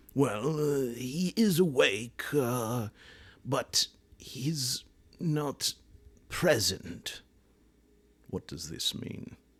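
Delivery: put-on slightly warped British Isles accent. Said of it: "my many British Isles accents morph or contort".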